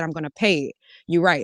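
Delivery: ordinary talk, nothing marked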